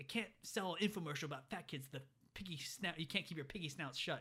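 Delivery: furious, angry ranting tirade. Retelling a movie scene where Tony goes off on someone: imitating Tony ranting angrily. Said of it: "he goes off on him".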